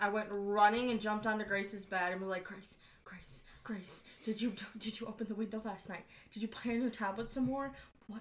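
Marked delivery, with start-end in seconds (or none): 2.4-8.2 mock, panicked, freaking-out repeated rapid barrage. Retelling waking a sister in the night: imitating own past panic. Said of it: "freaking out, panicking".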